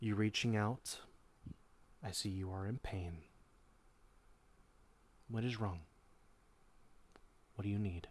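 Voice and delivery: deeply calm, untroubled, very calm tone. Narrating a scene, the speaker voices a voice addressing the listener: very calm voice. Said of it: "a very calm voice begins speaking to you".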